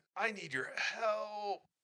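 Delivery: weak, feeble, high voice, "help" drawn out. A caller on the phone asks you for help in a weak voice. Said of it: "a weak voice says".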